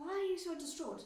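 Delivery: angry with rising pitch. Retelling own reaction to hearing the diagnosis: imitating own angry question. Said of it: "And I was angry".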